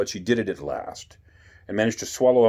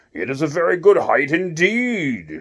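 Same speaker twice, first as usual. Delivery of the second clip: angry, raised, slow voice with "indeed" drawn out; 8 semitones higher, 5 dB louder than usual. Narrator reading Alice in Wonderland, the Caterpillar answers Alice; angry Caterpillar voice. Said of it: "At last the caterpillar took the hookah out of his mouth and addressed her in a languid, / At last the caterpillar took the hookah out of his mouth and addressed her in a languid, sleepy voice. / At l".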